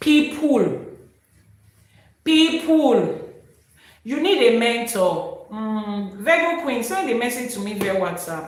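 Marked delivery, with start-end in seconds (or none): 0.0-3.2 "people" hit hard, high and loud. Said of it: "Emphasis on the word people".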